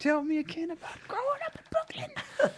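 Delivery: gushing fanboy voice. Playing a fan addressing a performer about his one-man shows, fanboy voice. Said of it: "that's the go-to fanboy voice".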